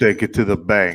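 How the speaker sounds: mafia-style tough-guy mobster voice. Repeating back what the other person said earlier, in a mafia voice. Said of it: "you used like a mafia, like a mafia voice".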